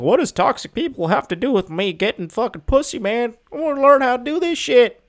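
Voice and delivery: put-on rural twang. Host voices what some guys may think about the topic, in a redneck voice. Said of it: "I don't know why I did that voice".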